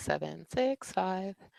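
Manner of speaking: lilting, up-and-down sing-song voice. Counting down before starting to present, in a sing-songy voice. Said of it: "I'm doing this sing-songy thing already".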